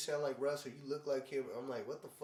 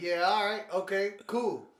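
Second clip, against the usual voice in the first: acted-out very loud, high, fed-up, dismissive tone; 6 semitones higher, 9 dB louder than usual. Retelling answering a stranger who said the speaker looks like Russ: retelling a mad reply. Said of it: "All mad".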